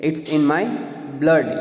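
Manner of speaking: ordinary talk, nothing marked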